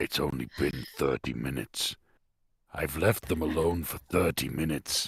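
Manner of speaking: muttering under breath. A player's character walks in and sees Raziel grappling someone, muttering under breath. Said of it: "I mutter under my breath".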